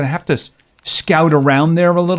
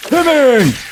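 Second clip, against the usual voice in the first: put-on taunting villain voice, higher; 9 semitones higher than usual. Taunting an enemy in a game: Joker impression. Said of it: "I'm doing my Joker que-, uh, impression".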